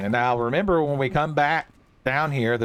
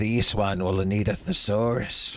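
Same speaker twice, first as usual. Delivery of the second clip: slow, drawn-out creature character voice; 3 semitones lower than usual. Imitating what Khajiits would say: Khajiit voice. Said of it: "to do a proper Khajiit voice".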